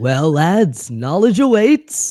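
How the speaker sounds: grand, high, loud, slow heroic proclamation.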